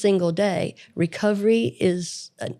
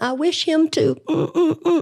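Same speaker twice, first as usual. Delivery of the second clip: mock little girl voice, high, very slow, sobbing; 8 semitones higher, 3 dB louder than usual. Retelling a grieving girl stomping around: imitating a crying girl. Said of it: "she's crying and she's going".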